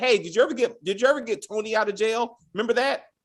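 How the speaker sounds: rapid, tumbling words. Speaker retells a man's question to a woman in an interview, talking very fast. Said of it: "he was talking very fast".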